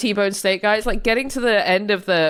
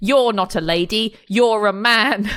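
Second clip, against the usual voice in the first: mock child voice, very slow, blunt, drawn out, accusing. Retelling a child's rude remark on a train: imitating an accusatory child. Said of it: "in this accusatory way".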